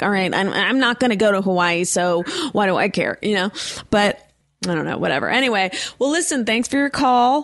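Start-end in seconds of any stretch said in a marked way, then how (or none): none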